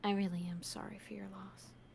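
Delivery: very quiet, barely-there leaning-in whisper. Voicing a character leaning up to speak to someone: whispering. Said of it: "she's trying to whisper this".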